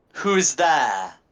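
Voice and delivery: loud, high, commanding, demanding call. A game master voices an unseen person calling out, demanding voice. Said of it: "in a demanding voice".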